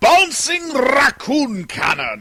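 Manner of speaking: loud, booming, swooping cartoon villain voice. Taking a dare to say the phrase in the Robotnik voice. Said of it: "say bouncing raccoon cannon in the Robotnik voice".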